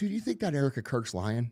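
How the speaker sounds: hushed, quiet voice. Retelling a question a friend asked so no one would hear: imitating a friend speaking quietly. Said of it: "he got real quiet".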